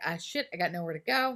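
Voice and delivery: ordinary talk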